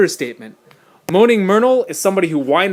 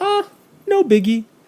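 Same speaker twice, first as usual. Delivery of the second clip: very high, offhand, dismissive understated brush-off; 10 semitones higher than usual. Repeating the understatement line: dismissive understatement. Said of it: "I'm making it sound small when I go".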